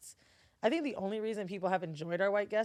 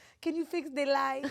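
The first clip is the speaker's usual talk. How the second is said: put-on Mexican Spanish accent, higher; 7 semitones higher than usual. Retelling the mother asking a mexican worker for help, put-on mexican accent. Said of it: "She accent match".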